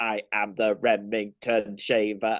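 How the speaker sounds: slow, deliberate, drawn-out machine voice. Quoting a shaver advert where the shaver talks: Dalek voice. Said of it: "the familiar Peter Hawkins voice going".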